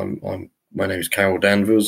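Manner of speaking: usual speaking voice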